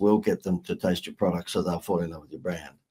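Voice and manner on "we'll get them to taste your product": plain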